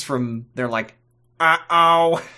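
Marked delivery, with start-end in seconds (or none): 1.4-2.2 high, loud goofy robot voice. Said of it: "idiot battle droids".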